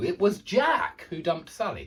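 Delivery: heavy stress on Jack, rest plain. Showing where to put emphasis in a sentence, stress on Jack. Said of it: "you put the emphasis right there".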